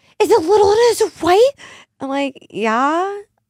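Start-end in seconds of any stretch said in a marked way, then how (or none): 0.2-1.5 put-on very high-pitched, frantic, freaking-out older lady voice. Retelling what an older lady who had the speaker's dog said, imitating a freaking-out older lady. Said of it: "She's like freaking out".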